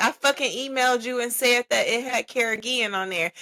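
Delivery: put-on heated, yelling-edged outburst. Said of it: "You don't have to yell".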